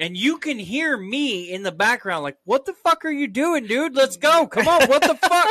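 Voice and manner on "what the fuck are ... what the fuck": very high-pitched, loud yelling. Retelling a game session gone wrong: imitating own past yelling. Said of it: "we're yelling at each other".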